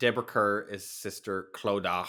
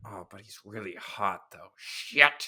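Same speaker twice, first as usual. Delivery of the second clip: slow, drawn-out, grudging, reluctant voice. Retelling how Sister Clodagh reacts to Mister Dean: imitating Sister Clodagh. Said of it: "she's always just like".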